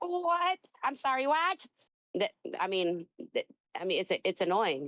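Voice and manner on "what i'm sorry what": put-on high, slow elderly lady voice. Speaker showing how he answers a caller by acting like an old lady, old lady voice. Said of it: "I act like I'm an old lady".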